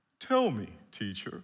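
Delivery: pious, churchy voice.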